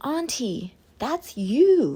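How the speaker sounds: put-on high, squeaky little toddler voice. Retelling your toddler niece coming into the room to speak to you, squeaky toddler voice. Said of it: "you know how like toddlers have like that squeaky voice".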